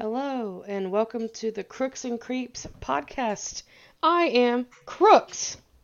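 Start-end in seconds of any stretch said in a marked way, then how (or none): 4.0-5.6 bold, chesty, full-chested voice, loud and high. Podcast co-host introduces himself at the start of the show, said with chest. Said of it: "You really said that with your chest".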